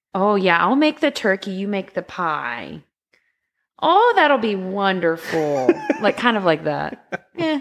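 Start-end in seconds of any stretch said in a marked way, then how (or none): 0.1-5.7 strong, sing-song put-on Midwestern accent. Asked to imitate a woman on the phone, doing a midwestern accent. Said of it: "It's really Midwestern".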